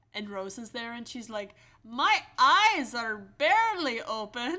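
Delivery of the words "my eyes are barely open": very loud, very slow, booming Scottish lilt. Describing the Airbnb cook, the speaker acts out her words; Rosa impression, sounds Scottish. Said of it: "Why does that sound Scottish?".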